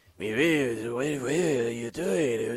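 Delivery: eerie, hushed, very slow creepy puppet voice. Describing a performer's puppet suddenly speaking up: scary puppet voice. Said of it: "that's spot on the voice".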